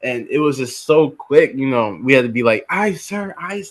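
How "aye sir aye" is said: put-on high, full-throated shouted yell. Retelling how recruits answered an instructor: imitating yelling at the top of lungs. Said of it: "yelling to the top of our lungs".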